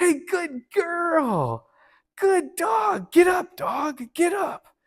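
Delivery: put-on excited, very high voice, girl stretched. Speaker demonstrating words the dog must learn to ignore, high-pitched excited voice. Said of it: "in a high pitched kind of excited voice".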